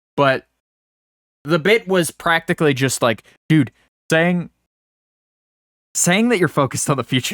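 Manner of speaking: words pushing past held-in laughter. Describing a TikTok bit he is borrowing, the speaker is holding back a laugh. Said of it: "I'm trying not to laugh".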